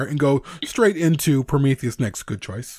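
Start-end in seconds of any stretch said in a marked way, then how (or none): none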